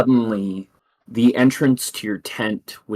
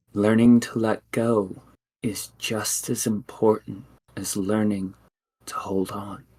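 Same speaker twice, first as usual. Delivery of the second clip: windblown, rustling voice like fallen leaves; 4 dB quieter than usual. A spirit speaks inside a listener's mind, in a voice like fallen leaves. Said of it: "She says, / and you hear inside your mind a voice like fallen leaves, / and you hear inside your mind a voice like fallen leaves".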